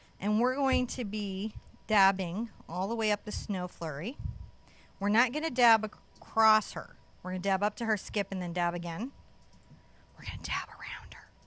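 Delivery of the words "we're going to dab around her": soft, breathy, hushed whisper. Painting instructor talks viewers through a step, whispering.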